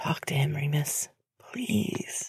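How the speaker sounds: whispered aside. Reading James speaking to Remus before leaving for the kitchen, in a whisper. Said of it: "adding in a whisper".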